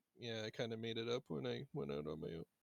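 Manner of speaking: soft, half-muttered mumble under the breath. Voicing a character who answers a question about his made-up name: mumbling. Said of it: "he mumbles something like".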